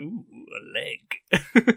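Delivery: high, slow, loud, creepy leering coo.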